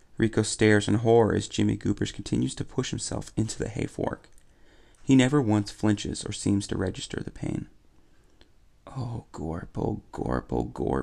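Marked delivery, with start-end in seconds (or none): 8.9-11.1 mumbling under breath, lower and slower. Rico, staring in horror at Jimmy Goobers, mumbled under his breath. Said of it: "Rico mumbles under his breath".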